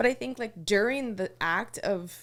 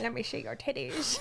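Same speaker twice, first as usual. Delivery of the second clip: put-on Scottish film star voice, quieter; 7 dB quieter than usual. Joking around with another speaker: Sean Connery voice. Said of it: "now it sounds like Sean Connery".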